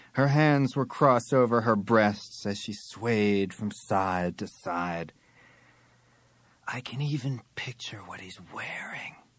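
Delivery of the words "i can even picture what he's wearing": hushed whisper, very quiet, barely audible. Narrator reads the model's line, whispering. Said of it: "she whispered".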